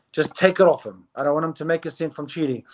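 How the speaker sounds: normal talking voice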